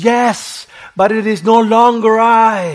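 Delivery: very slow, high, loud, drawn-out scream. Retelling how a rushing man answers the woman: imitating a man screaming back. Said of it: "he screams".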